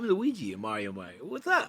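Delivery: very low, deep, swooping wisecracking voice. Imitating an actor playing Luigi in a movie: John Leguizamo impression. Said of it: "As John Leguizamo does".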